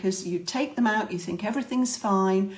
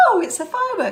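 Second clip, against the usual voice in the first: bright, happy, jolly, very high, raised voice; 10 semitones higher, 5 dB louder than usual. Showing dog owners how to react to a firework noise, in a happy, jolly voice. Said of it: "in a happy, jolly voice".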